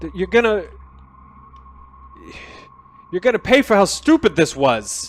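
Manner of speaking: loud, high, furious voice.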